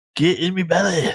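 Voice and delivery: high, comedic heavyset man voice. Quoting the Austin Powers character after he is named: Fat Bastard voice. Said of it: "the fat bastard".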